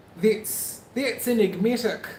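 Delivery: put-on New Zealand accent. Greeting a listener from New Zealand, saying it in a Kiwi accent. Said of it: "To practice my Kiwi accent".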